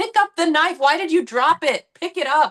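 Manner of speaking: mock exasperated, high, frustrated shouting. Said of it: "it's frustrating to watch".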